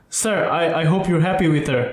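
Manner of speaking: normal talking voice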